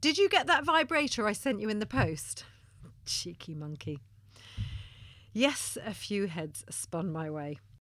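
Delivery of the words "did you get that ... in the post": very loud, shrill, carrying voice. Retelling what a caller on speakerphone said, in a very loud voice. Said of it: "in a very loud voice she said".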